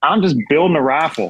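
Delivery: put-on thick Texas accent. Retelling a blacksmith's reply to their question: imitating a thick Texas accent. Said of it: "super thick Texas accent".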